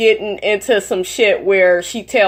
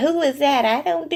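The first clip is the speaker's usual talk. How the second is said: put-on feigned innocent voice, higher and quieter; 6 semitones higher, 5 dB quieter than usual. Imagining how the person would react when confronted: imitating Toya playing dumb. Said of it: "that bitch would act stupid".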